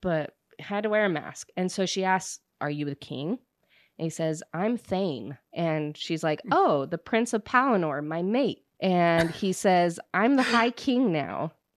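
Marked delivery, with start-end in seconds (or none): 6.5-8.6 imitated happy tone, mock cheerful. Summarizing a story for a listener, quoting a woman's reply, imitating a happy tone. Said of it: "you said it so happy".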